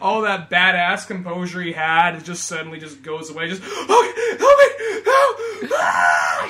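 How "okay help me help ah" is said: very high, desperate, drawn-out panicked screams. Acting out the old man trapped in a compressing trash can: panicked screaming. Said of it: "You just hear a real panic".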